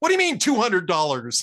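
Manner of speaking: very loud, room-filling outburst. Telling a joke, acting out the guy's reply to the student: retelling a very loud line. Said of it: "the guy says in a very loud voice".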